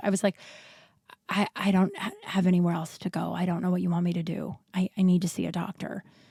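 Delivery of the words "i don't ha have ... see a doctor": dead-level, expressionless, flat monotone deadpan. Retelling their reply to a woman who laughed in their face, retold flat deadpan. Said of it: "And I just deadpanned".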